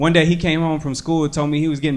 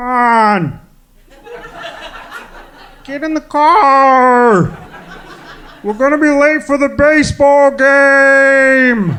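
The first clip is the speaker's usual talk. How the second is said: very high, very slow, loud sitcom-dad drawl, "car" stretched; 9 semitones higher, 5 dB louder than usual. Recalling doing impressions of TV dads, in a Ray Romano voice. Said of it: "I don't know why Ray Romano sounds like that".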